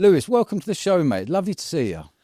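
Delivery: elevated presenter voice, pitched very high. A host welcomes a guest onto the show: elevated presenter voice. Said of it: "Your your voice was much more sort of elevated".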